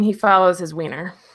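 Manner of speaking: usual speaking voice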